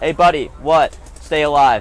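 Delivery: ordinary delivery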